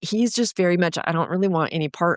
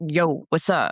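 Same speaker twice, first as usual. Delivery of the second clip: loose, playful, goofy, casual voice. Retelling how they normally answer the phone: imitating a goofy greeting.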